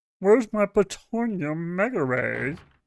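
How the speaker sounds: high-pitched cartoon Martian space-alien voice. Playing a video game and doing a Marvin the Martian voice. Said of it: "That is the one voice I can".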